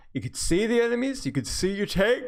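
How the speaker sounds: talking through a yawn, very high and stretched. Describing the team, enemies and tank to a teammate, yawning while talking. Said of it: "Excuse me, yawning".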